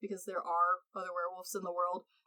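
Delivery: ordinary delivery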